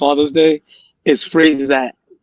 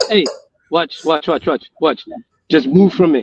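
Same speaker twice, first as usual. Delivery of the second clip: plain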